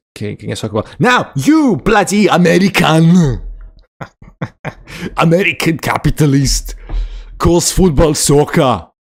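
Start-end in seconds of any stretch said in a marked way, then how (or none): 1.4-8.8 bad Austrian accent, laid on, loud and slow. Talking to an American, without knowing why you do it, put on a terrible Schwarzenegger accent. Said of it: "I do a Schwarzenegger accent".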